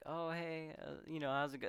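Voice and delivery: mock high, cautious, almost timid tone. Retelling a scene where Jerry greets a girl walking a dog: imitating timid Jerry. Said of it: "cautiously, timidly almost".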